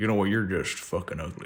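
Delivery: low register, hushed, quiet movie-star voice. Doing an impression from A Star Is Born: Bradley Cooper impression. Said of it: "a mean Bradley Cooper from, um, A Star Is Born impression".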